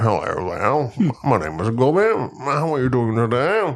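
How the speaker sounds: fake, proper British accent. Showing how the accent sounds: put-on proper British accent. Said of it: "Unless I do a proper British accent".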